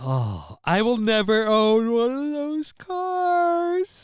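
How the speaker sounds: very high words spoken through a yawn. Mid-conversation, speaking while yawning. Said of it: "And I'm yawning".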